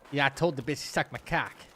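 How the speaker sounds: attempted fake Boston accent. Speaker trying out a line, then admitting the accent needs work: attempted boston accent. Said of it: "I gotta work on the Boston".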